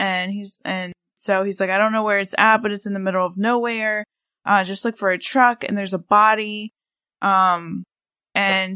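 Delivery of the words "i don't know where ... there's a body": ordinary delivery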